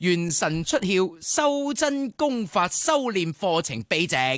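slow, drawn-out grand reading, each word slow. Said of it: "嚟多次".

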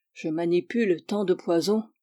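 plain

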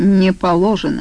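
ordinary delivery, nothing marked

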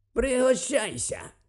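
ungracious, grumbling voice. Narrating fiction, an uncle in a lab offers his nephew food: ungracious grumble. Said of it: "нелюб'язно буркнув він".

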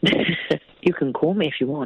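fake seductive voice. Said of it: "I can do a sexy voice if you want".

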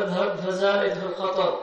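ordinary delivery

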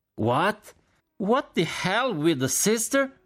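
very high, loud shouted outburst. A general shouts in reaction to the story being told: shouting. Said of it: "gridò il generale Cork".

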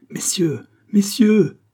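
very high-pitched, quavering, trembling cry. A man begs the gentlemen present to save him, crying out, trembling. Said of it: "s'écria en tremblant Foulon".

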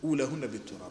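ordinary delivery

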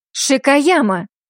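sharp bark. She cuts Shakayama off mid-sentence, barked. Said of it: "рявкнула она".

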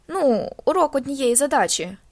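condescending, talking down as if to a slow listener. Reading a story aloud, the boy repeating himself to his grandfather: condescending. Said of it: "повторив хлопчак таким тоном, наче промовляв до розумово відсталого".

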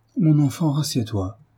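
tender, motherly voice. [name] speaking to her son Frédéric, soft and tender. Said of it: "d'une voix douce et tendre".

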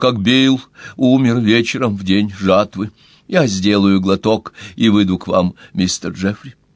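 ordinary talk

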